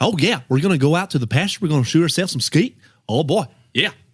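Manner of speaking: put-on Southern Arkansas accent. Talking about accents, the speaker imitates an uncle from Arkansas: imitating Uncle Warren's Arkansas accent. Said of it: "He always talks like that all the time".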